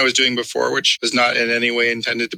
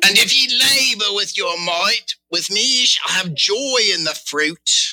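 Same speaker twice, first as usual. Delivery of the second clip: high, slow, laid-on lustful pirate voice. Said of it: "Horny pirate is where it was going".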